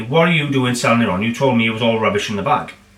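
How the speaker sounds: usual speaking voice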